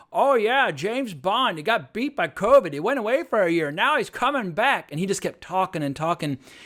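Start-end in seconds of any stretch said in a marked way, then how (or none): 0.1-4.9 put-on ridiculous old-man voice, loud, drawn out. Retelling an old man in the theater talking during trailers: imitating a ridiculous voice. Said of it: "really ridiculous voice starts going".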